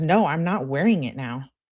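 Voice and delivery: ordinary talk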